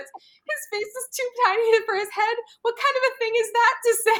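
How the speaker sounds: tiny high-pitched voice. Quoting Francine's reply from an episode: imitating Francine's little voice. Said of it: "In her, like, little voice".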